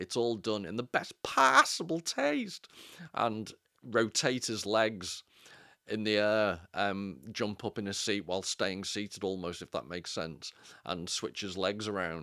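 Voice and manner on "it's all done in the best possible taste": loud, high, swooping, sing-song awful put-on voice. Quoting a comedian's character catchphrase: awful Kenny Everett as Cupid Stunt impression. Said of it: "I'm sorry for my awful impression".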